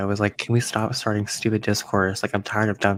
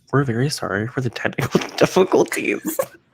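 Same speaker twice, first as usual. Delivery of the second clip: teasing, mocking voice; 4 semitones higher than usual. Retelling what a friend said on the podcast: imitating a friend's voice. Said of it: "I'm just really bad at doing voices".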